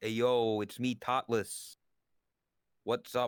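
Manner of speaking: put-on New Jersey accent. Trying out an accent for others in a vr chat, attempted jersey accent. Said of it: "the closest Jersey accent".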